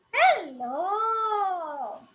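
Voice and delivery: high, loud puppet voice, "hello" stretched. Showing that a puppet needs its own voice, speaking in Danny's puppet voice. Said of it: "If I'm speaking in Danny's voice, he has a complete different voice".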